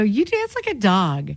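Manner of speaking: put-on slight California accent. Retelling what he once said to a friend who was dancing, in a little california accent. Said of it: "in my little California accent".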